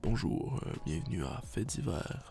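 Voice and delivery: very low, very deep, breathy near-whisper. A host shows how they could open the episode in a very deep voice. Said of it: "je peux prendre la voix très grave".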